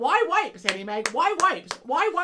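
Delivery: loud, high, insistent yelling, repeated. Speaker retells how he ran after her at Target, imitating him yelling.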